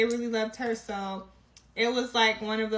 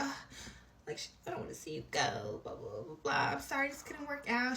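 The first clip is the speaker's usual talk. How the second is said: mournful, soft, breathy, sad, near-whispered voice; 3 semitones higher, 8 dB quieter than usual. Retelling what she said when handing over the stuff: imitating someone sounding sad. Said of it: "She's looking all sad".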